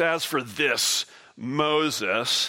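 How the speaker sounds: mock-derisive voice. Speaker quotes what the people say about moses, retelling the people's derision. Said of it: "you can hear the derision in their voice".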